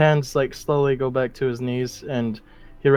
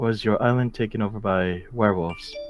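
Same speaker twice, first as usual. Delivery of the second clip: quiet, soft, confiding voice under the breath; 3 semitones lower than usual. A player voices a character turning back to a woman, in a hushed tone. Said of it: "Like still in the hushed tone".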